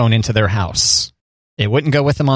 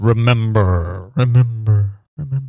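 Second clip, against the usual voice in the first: attempted deep bass voice, pushed as low as possible; 2 semitones lower than usual. Talking about Mufasa living in the thunderstorms: James Earl Jones voice. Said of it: "I can't do a good James Earl Jones voice".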